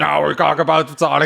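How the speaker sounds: slow, rough, croaking froggy voice. Joking that Alex Jones co-hosts and reads the show: froggy Alex Jones voice. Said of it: "his froggy voice".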